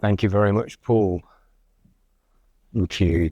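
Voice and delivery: croaky, hoarse throaty voice. Session chair thanking the previous speaker, in a croaky voice. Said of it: "with my croaky voice today".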